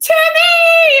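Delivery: loud high-pitched screaming.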